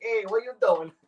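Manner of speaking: playful, put-on stage-Italian accent. Retelling the Italian banter from a past show: put-on Italian accent. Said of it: "the fun Italian hand gesture stuff".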